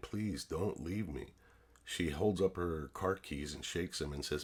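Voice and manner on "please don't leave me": mock tearful, crying, begging voice. Retelling begging her not to leave as she walks out, crying, pleading. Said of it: "I was literally in tears, crying".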